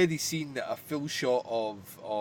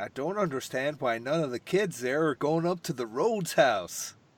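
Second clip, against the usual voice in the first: put-on, authentic-sounding American accent. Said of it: "my authentic American".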